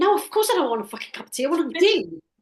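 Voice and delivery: play-acted, uptight, irritable, loud, high, stressed snap. Acting out an uptight, stressed person offered tea: imitating a stressed, uptight snap. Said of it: "when you're uptight and you're stressed".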